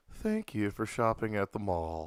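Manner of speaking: slow, sing-song PA announcer voice, drawn out, swooping. Retelling an announcement over the mall loudspeaker: imitating a loudspeaker announcement. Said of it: "the voice come over the loudspeaker like".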